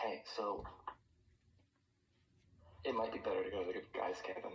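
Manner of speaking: half-whispered stage whisper, off to the side. Pulling a companion aside to suggest a different cabin: half-whispering in character. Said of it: "gonna, like, whisper".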